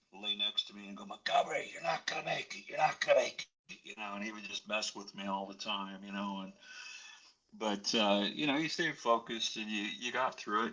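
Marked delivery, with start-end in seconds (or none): 1.1-3.8 wounded veteran voice, pitched high. Recalling a veteran with shrapnel in his neck who teased him: imitating the veteran's voice. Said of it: "he had shrapnel in his neck, and he used to talk like this".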